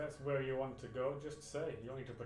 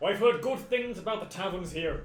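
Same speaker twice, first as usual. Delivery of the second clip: booming, very loud stock fantasy dwarf voice; 7 semitones higher, 12 dB louder than usual. In a role-play scene, the speaker voices their dwarf character: typical dwarf voice. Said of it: "I try and do my most like typical dwarf voice".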